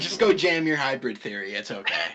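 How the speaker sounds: put-on condescending, belittling tone, loud and swooping. Jokingly telling another player to go play their album: mock demeaning tone. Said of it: "the way you said it, it's like, it's so demeaning".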